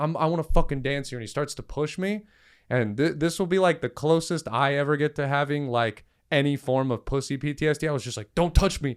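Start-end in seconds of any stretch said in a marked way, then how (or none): 0.0-1.2 mock-aggressive, insistent tone. Retelling a man who grabbed his shirt after being asked to stop dancing, retelling an aggressive demand. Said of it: "he grabs my shirt like aggressively".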